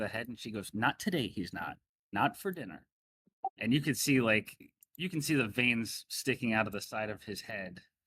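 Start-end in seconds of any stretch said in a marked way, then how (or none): 0.7-2.8 light, playful, sing-song teasing tone. Voicing a lady who teases her husband at dinner: playful.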